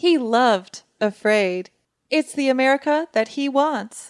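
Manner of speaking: slow, put-on AI assistant voice. Answering a question put to the pretend AI: put-on AI voice. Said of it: "Jaya, Jaya, what did President Trump think".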